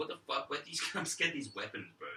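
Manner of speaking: bewildered, panicked, freaked-out sudden outburst. Retelling own first reaction to the enemies' weapons: imitating own freaking out. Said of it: "I was wigging out first".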